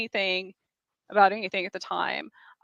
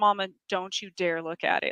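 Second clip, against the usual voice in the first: mock dead-serious, grave tone; 5 dB quieter than usual. Mother retells her three-year-old daughter's warning, imitating a dead serious warning. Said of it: "in the most serious".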